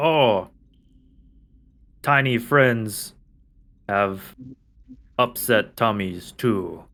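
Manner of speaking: slow dull giant voice. Voicing one head of an Ettin talking to the other head: Ettin head speaking. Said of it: "the one head says to the other".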